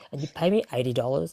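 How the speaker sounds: ordinary talk, nothing marked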